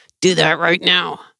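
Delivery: through gritted teeth, not loud. Showing how parents sound angry without yelling, a parent's order: through gritted teeth. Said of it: "We might grit our teeth and say".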